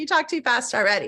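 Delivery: ordinary delivery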